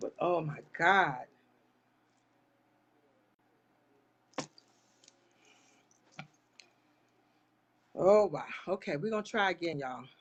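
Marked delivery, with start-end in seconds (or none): 0.0-8.4 slow, shaken, overcome, struggling for composure. Reacting to what she shared while asking for prayer: overcome with emotion. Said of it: "trying so hard not to let that thing affect me".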